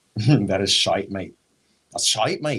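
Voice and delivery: badly done put-on Scottish accent. On a podcast, the speaker attempts a bad scottish accent. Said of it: "That was supposed to be Scottish".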